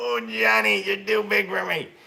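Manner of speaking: very high, rough, creaky straining voice. Doing an impression of the speaker's dad picking up the kids, imitating dad lifting heavy kids. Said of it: "He'd go".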